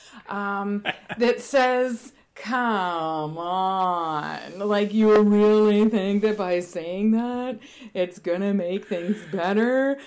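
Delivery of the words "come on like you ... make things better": put-on cranky, grumpy voice, louder. Describing the cranky side of themself and voicing what it says, mock-cranky inner voice. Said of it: "this like little cranky side of me".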